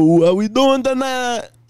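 put-on a little Jamaican accent. Acting out opening a set on stage: a little Jamaican accent. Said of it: "A little Jamaican".

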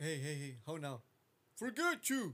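slow, mismatched, overdubbed tv dub voice. Retelling a TV edit where a different voice dubs the curse: imitating a TV dub voice. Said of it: "This doesn't sound like him".

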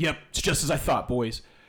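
clear, declaring announcement, like a proclamation. A character stands, draws his sword and addresses the boys in a loud, clear voice. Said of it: "in a loud, clear voice".

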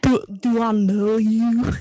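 attempted, put-on Scottish accent. Trying a Shepherd line for the first time, Scottish accent. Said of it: "Shepherd right away is like in a Scottish accent".

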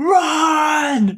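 high-pitched, loud, panicked scream. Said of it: "I yell it".

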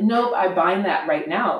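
ordinary talk

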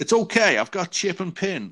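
high-pitched, cheeky taxi driver voice.

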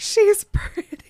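mock, very high, shrill, loud, unhinged screaming. Retelling a scene where he shakes a fence: imitating someone screaming.

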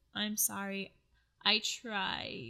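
slow, drawn-out, sobbing crying voice. Retelling what a woman said when she picked up the phone, imitating someone crying. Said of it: "she's like crying and she says".

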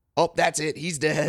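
high, loud, screaming wrestling commentator voice. Retelling a wrestling commentary moment: imitating King screaming. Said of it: "King screaming".

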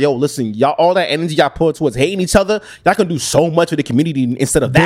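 ordinary delivery

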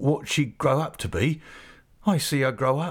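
plain reading voice

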